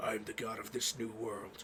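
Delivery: low, quiet, roughened gruff voice. Describing a game's version of Pit and quoting his line, gruff Pit voice. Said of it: "he's like got a gruff voice".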